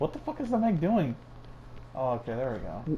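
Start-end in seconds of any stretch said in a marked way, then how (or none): 0.0-1.1 panicking, much higher pitch, faster. Player watching the Meg during a game, freaking out. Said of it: "I'm freaking out".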